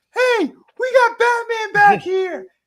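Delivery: shrill, full-throated, very loud high shout. Retelling a story, speaker acts out another guy opening a door and calling out, retelling a shout. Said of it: "he just shouts".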